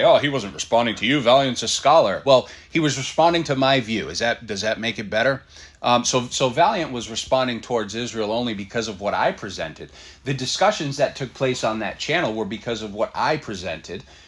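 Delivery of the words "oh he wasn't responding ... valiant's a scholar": scoffing, dismissive, slightly raised voice. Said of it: "scoff and say".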